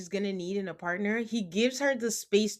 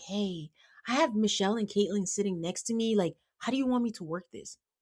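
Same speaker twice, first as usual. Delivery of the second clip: put-on whispering. Retelling how a cast member whispered to Nick about seating: imitating someone whispering. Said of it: "she has the audacity to whisper to Nick".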